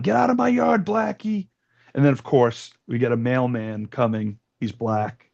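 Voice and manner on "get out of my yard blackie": mock shrill yell, pitched very high. Retelling a film scene where the mother yells at a dog: imitating a mother yelling. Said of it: "the mother's always yelling".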